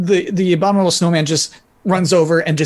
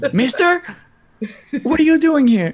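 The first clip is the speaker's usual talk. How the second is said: very high, slow, put-on Spanish accent; 10 semitones higher than usual. Playing a kid speaking to a man in an improvised scene: Spanish accent. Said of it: "What is he, like, Spanish now?".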